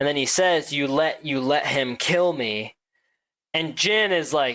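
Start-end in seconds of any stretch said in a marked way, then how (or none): none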